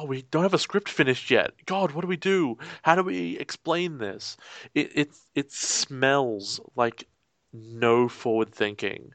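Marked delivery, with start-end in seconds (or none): 0.0-4.4 put-on flustered, panicky, scrambling yelling. Imitating a production manager yelling about an unfinished script: imitating a production manager yelling. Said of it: "You can hear the production manager yelling".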